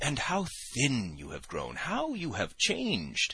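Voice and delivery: falsely pitying, venomous, high and swooping pitch. Zverkov, scanning the narrator amid his friends' jibes, speaks with a shade of venom. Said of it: "with a shade of venom in his voice".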